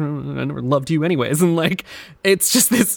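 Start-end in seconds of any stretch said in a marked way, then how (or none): 0.0-1.4 put-on murmuring voice. Retelling a game character's reaction to a note: imitating a character murmuring. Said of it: "he just keeps murmuring to himself".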